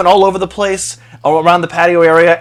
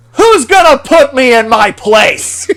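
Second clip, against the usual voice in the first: high, raised shout; 7 semitones higher than usual. Retelling what another guy shouted after a spilled drink: retelling a shout. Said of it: "he sticks his arms out and he shouts".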